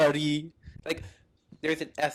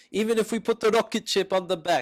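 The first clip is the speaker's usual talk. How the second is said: fake Russian accent throughout, pitched up; 5 semitones higher, 3 dB louder than usual. Asked what he said, repeating it in a put-on russian accent. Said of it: "why are you doing like a Russian accent?".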